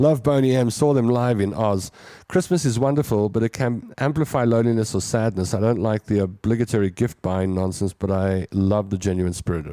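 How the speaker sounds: plain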